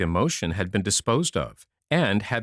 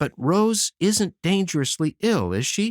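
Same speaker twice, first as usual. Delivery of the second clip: worried, concerned, anxious, higher pitch; 9 semitones higher than usual. Charlie asks about Rose as Aunt Plenty hurries past, anxious. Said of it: "he added anxiously".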